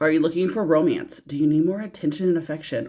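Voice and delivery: ordinary talk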